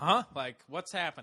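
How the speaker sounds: ordinary talk, nothing marked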